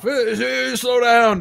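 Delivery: put-on cranky old man hollering, high and loud. Hearing cars on the street late at night, playing an old man yelling at cars. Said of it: "Old man yells at cars".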